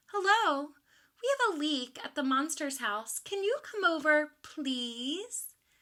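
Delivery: polite, sweet voice. Reading a story aloud, a character phones for help: nice voice. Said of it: "she said in her nice voice".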